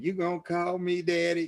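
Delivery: put-on young woman's voice. Acting out a joke about old men and young women: voicing a young woman. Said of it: "it's a joke that goes like this".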